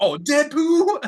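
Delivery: put-on high, slow, innocent child voice. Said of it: "the kid goes".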